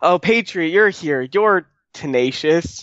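fed-up, dripping with annoyance, exasperated. Describing a favorite scene from the show, quoting Gwen: imitating Gwen's annoyed tone. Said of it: "annoyance dripping through Gwen's voice there".

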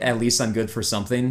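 plain

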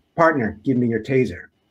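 ordinary delivery

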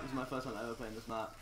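rushed, very soft, fast, under the breath. Introducing the final map in a game they've never played, very fast. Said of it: "I said that really fast".

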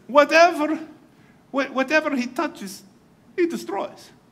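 pretty good fake Russian accent. Retelling a movie scene, quoting the russian premier: put-on russian accent. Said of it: "It's pretty good Russian".

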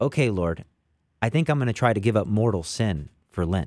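ordinary delivery

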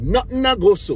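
put-on Caribbean accent. Speaker repeats a phrase for the listener in Caribbean dialect. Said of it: "Let me speak, you know, Caribbean dialect for you".

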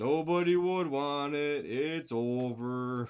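very slow, mopey, dragged-out drawl. Echoing back what the other person just said, in an Eeyore voice. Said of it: "Why do you sound like Eeyore?".

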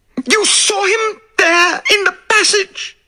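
very high-pitched, tearful cry. A woman turns to Poirot as the locked door swings open, crying out. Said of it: "she cried".

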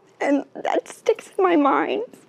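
tearful voice. Remembering a man who stopped traffic to help an old lady, the speaker says this crying. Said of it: "(Janey crying)".

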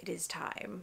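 quiet, soft, hushed cartoon-character voice. Recall seeing your next book's assigned number on the spreadsheet, and announce it in a Rafiki impression. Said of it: "In my best Mufasa impression".

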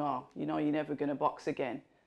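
ordinary talk

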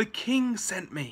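out of breath. Captain Roach emerges from the fog with a message, panting. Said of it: "panted the captain".

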